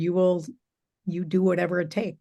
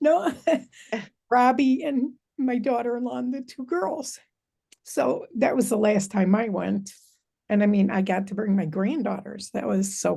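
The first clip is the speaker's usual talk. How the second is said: high, tearful speech through tears; 5 semitones higher than usual. Speaker recalling bringing family along on the last trip, crying. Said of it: "I'm crying".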